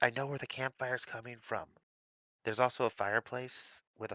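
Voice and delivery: hushed whispered speech. In a tabletop game, a player's character whispers back to two companions. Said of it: "I'm gonna whisper back to both of them".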